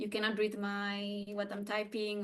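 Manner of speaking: normal talking voice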